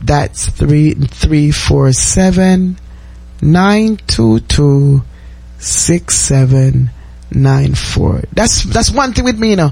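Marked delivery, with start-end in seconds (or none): 0.0-8.2 slow, careful read-out. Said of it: "let me repeat it one more time slowly".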